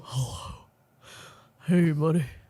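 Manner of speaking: voice dropped deep. Imitating a partner answering a brother's call in a deep voice. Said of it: "you talk deep like that only when your".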